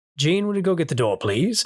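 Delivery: courteous, polite, teacher-like tone. Acting out an imagined film scene in Charles Xavier's voice: imitating Charles Xavier. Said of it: "Charles is just like".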